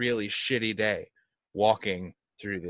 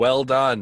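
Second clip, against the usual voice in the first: loud, mocking, sarcastic delivery; 4 semitones higher, 7 dB louder than usual. Sending an in-character message to a player: sarcastic.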